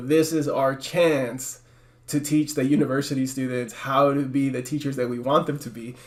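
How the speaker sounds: ordinary talk, nothing marked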